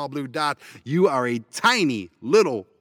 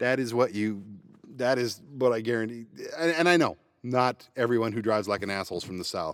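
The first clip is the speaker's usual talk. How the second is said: plain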